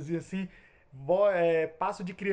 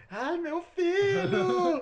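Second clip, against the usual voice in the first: very high, tearful woman's crying, filho drawn out; 12 semitones higher, 4 dB louder than usual. Describing a haunted house's sound boxes, the speaker acts out a woman crying. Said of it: "uma mulher chorando".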